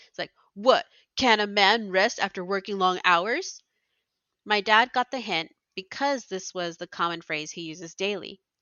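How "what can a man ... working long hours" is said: the most macho man voice possible, full-on. The speaker imitates a parent's daily phrase to show him what he's like, macho voice. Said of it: "in the most macho voice I could muster".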